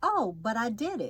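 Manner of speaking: plain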